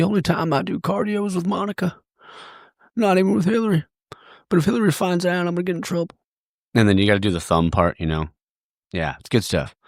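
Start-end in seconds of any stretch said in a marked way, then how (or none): 0.0-6.2 pitched way up, hammed-up, overacted delivery. Retelling a joke made in a store: Bill Clinton impression. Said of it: "busted out the Bill Clinton impersonation".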